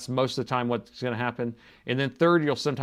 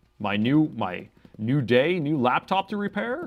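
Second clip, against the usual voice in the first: put-on radio announcer delivery; 3 semitones higher than usual. Answering John's question about an AI voice: fake announcer voice. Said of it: "that's my fake announcer voice".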